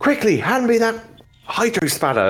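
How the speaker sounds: shrill, very high, swooping yell. Voicing a character calling out over blasts: shouting. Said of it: "you hear them shouting".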